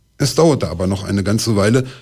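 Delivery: ordinary delivery, nothing marked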